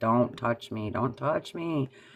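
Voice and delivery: crying out through sobs, bawling and tearful. Retelling being three and scared of a man: imitating own bawling as a child. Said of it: "just started bawling, like".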